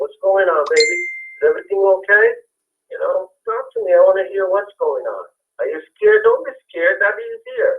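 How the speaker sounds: put-on tender, comforting, sing-song dad voice. A father retells pulling his daughter aside to check on her: retelling a gentle comforting tone. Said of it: "I'm like".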